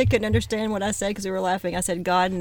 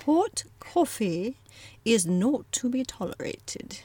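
tentative, attempted British accent; 4 semitones higher than usual. Practicing a phrase aloud, unsure of pulling it off: attempted British accent. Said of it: "how to speak with a British accent".

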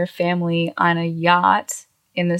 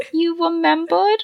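mock whiny gushing baby voice, higher; 10 semitones higher than usual. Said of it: "He's acting like a little fucking bitch baby".

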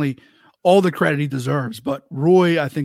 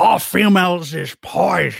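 cheap knockoff mock-grumpy voice; 2 semitones higher than usual. Asked to perform it, the speaker does a cheap grumpy impression. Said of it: "my great value grumpy impression".

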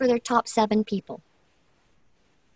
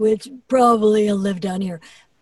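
deep, lowered giant hippopotamus voice. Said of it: "my giant hippopotamus green voice".

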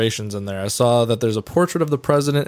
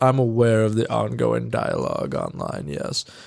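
haughty, snooty put-on voice, swooping and creaky. Reading a designer's quoted reply to Vice: mock-snooty voice. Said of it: "I very feel like reading it in that voice, like she's for sure just a snooty ass person".

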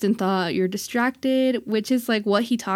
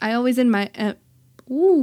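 stuttering, stumbling and tripping over the words; 2 semitones higher, 3 dB louder than usual. Praising a member of a group and noticing your own stumble, stuttering. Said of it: "there I am stuttering".

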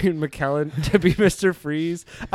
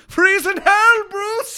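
loud yell, pitched very high; 5 dB louder than usual. Imagining Mister Freeze yelling ice puns at Batman: Ian McKellen yelling. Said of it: "Ian McKellen yelling ice puns".

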